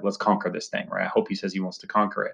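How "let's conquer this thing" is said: ordinary talk, nothing marked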